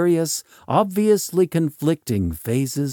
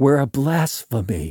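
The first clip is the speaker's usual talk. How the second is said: plain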